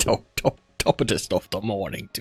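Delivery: exaggerated fake English accent. Suggesting they do it in exaggerated English accents instead, bad English accent. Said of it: "Your English accent cracks me up so much".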